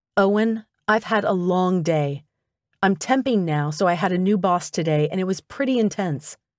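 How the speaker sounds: plain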